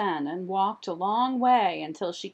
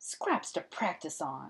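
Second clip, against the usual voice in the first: muttered half-whisper, hushed and breathy; 3 semitones lower, 8 dB quieter than usual. Having raced out the door, a woman mutters to herself. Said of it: "she muttered".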